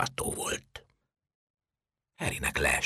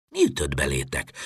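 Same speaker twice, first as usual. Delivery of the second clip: plain reading voice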